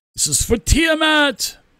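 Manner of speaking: very high, ringing, drawn-out knightly battle cry. Voicing an armored knight rallying his allies: knight yelling a battle cry. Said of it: "he also yells out".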